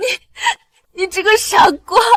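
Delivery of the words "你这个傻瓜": crying, sobbing. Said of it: "别哭".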